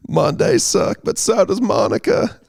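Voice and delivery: rasping politician-style voice. Speaker showing an impression they used to do well, in a Bill Clinton impression. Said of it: "I used to do Bill Clinton really well".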